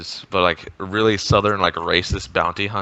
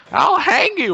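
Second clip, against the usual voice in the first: really high-pitched, squeaky, loud voice; 5 dB louder than usual. Recounting outrageous things some other people said, imitating a really high-pitched voice. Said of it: "They had like a really high pitched voice".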